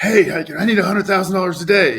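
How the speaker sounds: high, loud, urgent yell.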